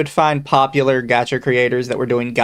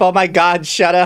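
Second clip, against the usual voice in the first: mock frantic, pleading tone, higher pitch; 4 semitones higher than usual. Imitating a lawyer shaking a manager, begging him to stop: imitating a lawyer shaking someone. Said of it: "the lawyer shaking, shaking the Niji Sanji manager, going".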